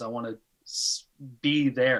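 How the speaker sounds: plain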